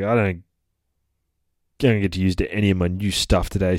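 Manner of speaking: put-on cranky, grumpy complaining voice. Retelling a comic scene where Gabby complains at home: imitating a cranky character. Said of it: "all cranky".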